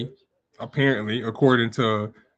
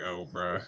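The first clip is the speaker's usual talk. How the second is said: put-on amused, dismissive brush-off through a laugh; 6 semitones lower, 13 dB quieter than usual. Retelling how they react to him, imitating own laughing reply. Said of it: "I just be laughing at him like".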